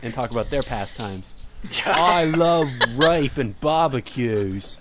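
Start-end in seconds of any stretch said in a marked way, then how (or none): 1.8-4.8 slow, put-on Australian accent. Doing a best attempt at talking about australian pastimes, put-on australian accent. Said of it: "I'll do my best Australian accent".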